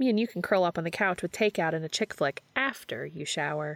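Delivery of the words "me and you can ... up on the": usual speaking voice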